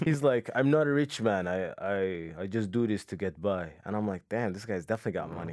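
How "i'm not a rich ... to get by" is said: put-on very slow Nigerian accent, long I. Retelling what a man told him while they smoked weed, in a Nigerian accent. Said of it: "I'm trying to get the Nigerian accent right".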